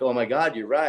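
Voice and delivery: ordinary talk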